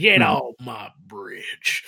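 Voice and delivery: put-on loud Texan accent in old-Western cowboy style. Describing someone's Texan accent to the others, doing an old-Western Texan accent. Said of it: "someone doing a Texan accent mixed with, like, an old Western trope".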